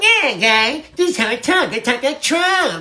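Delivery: sly little weaselly voice, squeezed up high. Showing his wife a show's new Trump voice, doing a weaselly Trump voice. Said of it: "This is Trump's new voice. It's a little weaselly".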